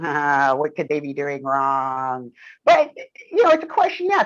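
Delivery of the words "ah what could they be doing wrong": put-on low, sinister evil-villain voice, musing. Presenting results, pretending to be someone hunting for faults: mock evil voice. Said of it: "this evil person back here going".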